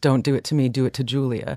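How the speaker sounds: ordinary talk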